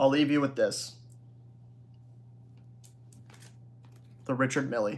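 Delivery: soft voice breaking on the word. Closing out after thanking everyone for donations, speaker leaves a parting line: voice cracking. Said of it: "that voice crack".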